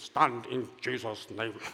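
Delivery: strong put-on German accent. Retelling the words of a man lying on a blanket; imitating a German accent. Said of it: "But like with a German accent".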